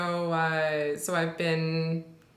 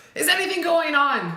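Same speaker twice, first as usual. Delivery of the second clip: very high-pitched, exasperated, fed-up; 10 semitones higher, 5 dB louder than usual. Quoting frustrated people who ask about the bridge: imitating a frustrated asker. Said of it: "that level of frustration".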